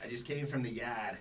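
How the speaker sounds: attempted Eastern Boston accent.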